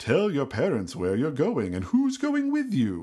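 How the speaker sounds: spooky, scary, ominous commercial announcer voiceover voice. Recalling an old Halloween commercial, quoting its line in a scary voice. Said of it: "a scary voice comes on and goes".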